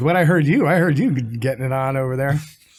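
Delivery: plain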